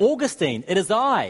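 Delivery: mock, high, drawn-out long yell. Retelling a former mistress calling out on the street: imitating someone yelling. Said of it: "she yells out".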